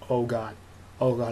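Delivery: plain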